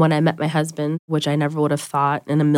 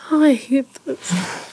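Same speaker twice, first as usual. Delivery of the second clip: emotional voice, very high and slow, drawn out; 9 semitones higher than usual. Speaker being interviewed about their relationship, getting emotional. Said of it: "I'm getting emotional now".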